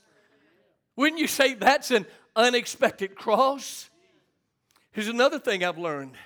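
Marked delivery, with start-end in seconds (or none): 1.0-3.9 emphatic delivery with "wouldn't" stressed.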